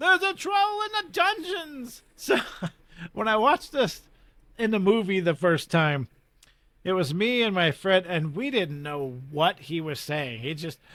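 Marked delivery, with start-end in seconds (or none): 0.0-2.0 high, panicked yell. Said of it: "came running in yelling".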